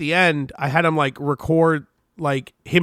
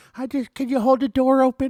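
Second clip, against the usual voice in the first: put-on high-pitched little old lady voice; 8 semitones higher than usual. Acting out an old lady asking for a door to be held: imitating an old lady. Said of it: "It's like some old lady".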